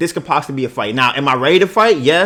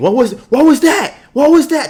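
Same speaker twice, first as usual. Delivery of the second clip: mock very high, shrill, rising shrieking scream; 12 semitones higher, 4 dB louder than usual. Retelling a passenger screaming at someone from a bike: imitating someone screaming. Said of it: "looks over my shoulder and screams".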